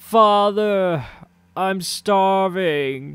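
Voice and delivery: put-on young man's very high, shrill, very loud cry. A game master voices a young man heard from the chapel: young man crying out. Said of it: "a young man's voice cry out".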